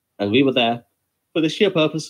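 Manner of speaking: words distorted by yawning. Describing why the group was at a booked venue, talking while yawning. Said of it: "Sorry, yawning here".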